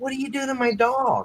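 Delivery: teasing, joking, mock-indignant, very high-pitched voice. Retelling what they asked the old guy about their dog, jokingly retold question. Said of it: "I I did it jokingly".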